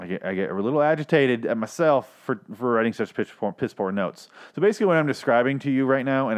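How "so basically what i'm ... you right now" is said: fast, rushed, hurried speech. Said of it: "I'm speaking this fast".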